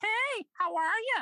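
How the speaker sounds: very high-pitched woman's voice. Describing a sketch of a man dressed like a lady, in a high lady voice. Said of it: "she's got this high".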